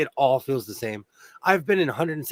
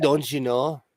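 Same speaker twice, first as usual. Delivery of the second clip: put-on Minnesota accent. Teasing someone who cringes at that accent, in a minnesota accent. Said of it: "every time I hear that accent".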